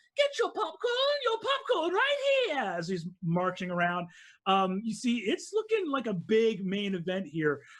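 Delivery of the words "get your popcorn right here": vendor's hawking call, much higher pitch. Describing a big event, voicing a woman selling popcorn: popcorn vendor call. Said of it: "She's going like".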